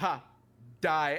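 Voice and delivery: put-on tough voice. Retelling a trip home, quoting Deer talking tough: imitating Deer's badass taunt. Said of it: "talking real badass".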